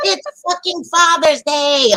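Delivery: mock high, drawn-out screaming scolding tone. Retelling how the stepmother screamed at the father: imitating someone screaming. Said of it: "I hear her screaming at my dad".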